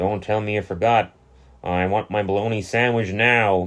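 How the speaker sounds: mock-menacing, put-on menacing voice. Retelling a fishing scene where Bart forgot the bologna, mock-threatening voice. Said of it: "He's so threatening".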